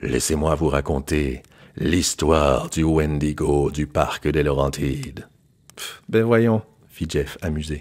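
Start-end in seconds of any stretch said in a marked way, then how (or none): 0.0-5.3 big put-on deep voice, much slower. A man telling a horror story around a campfire to the group, in a big deep voice. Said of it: "Il a pris une grosse voix".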